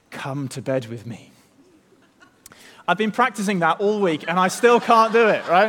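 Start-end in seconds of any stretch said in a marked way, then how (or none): 0.1-1.3 put-on, would-be sultry, seductive voice. Retelling what Potiphar's wife says to him, mock-seductive voice. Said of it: "who in a seductive voice, out of nowhere, simply says".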